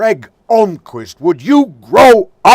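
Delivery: very high, very loud, shrill, drawn-out bellow. Retelling how the teacher scolded him in class: imitating Miss Braun bellowing. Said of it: "she bellowed out".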